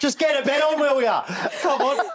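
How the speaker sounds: fake northern English accent. In a mattress bit, after giving up on scottish, a fake northern accent. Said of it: "Is that your northern again?".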